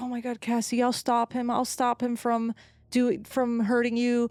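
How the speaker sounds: put-on tearful, slow, sobbing, crying voice. Retelling a suspect's interrogation, imitating someone crying. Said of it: "crying and he's like".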